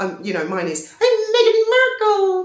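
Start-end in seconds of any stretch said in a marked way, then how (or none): 1.0-2.4 dead high-pitched, raised voice, pitched way up, loud. Showing an impersonation of Meghan Markle: high-pitched Meghan Markle impression. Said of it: "my impersonation of her".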